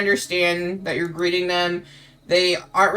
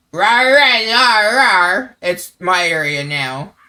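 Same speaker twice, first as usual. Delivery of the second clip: loud, hammy, put-on goblin creature voice; 7 dB louder than usual. Telling about a friend who claimed this area as hers: goblin voice. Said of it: "but goblin".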